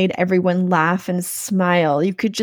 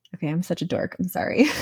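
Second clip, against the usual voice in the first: plain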